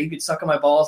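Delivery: plain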